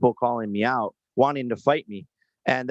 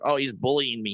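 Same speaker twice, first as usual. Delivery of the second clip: taunting schoolyard middle-schooler voice; 3 dB quieter than usual. Mocking an opponent's complaint about bullying: mocking a middle schooler. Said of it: "You sound like a middle schooler".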